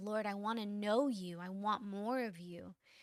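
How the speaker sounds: put-on, pleading, begging tone of voice. Retelling own prayer at camp that night: retelling a begging prayer. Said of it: "and I was begging".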